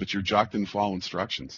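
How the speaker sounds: ordinary talk, nothing marked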